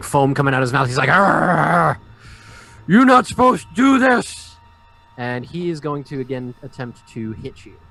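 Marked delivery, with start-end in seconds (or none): 1.1-4.6 furious, loud, high raging roar with drawn-out "arr". Voicing a raging foe who has foam coming from his mouth: furious raging roar. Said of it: "number one is furious at this point".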